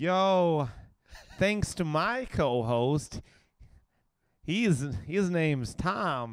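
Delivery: high, put-on American accent. Asked for their best american accent, thanking the podcast co-host in an american accent. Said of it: "It's not bad".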